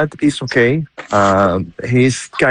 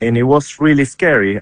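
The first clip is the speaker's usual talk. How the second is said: usual speaking voice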